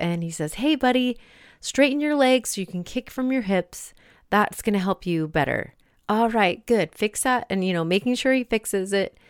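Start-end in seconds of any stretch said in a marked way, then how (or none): 0.5-7.5 put-on kind, encouraging coach voice, gentle. Retelling how a teacher corrects a child's kick, imitating a kind swim teacher. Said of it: "is kind and supportive".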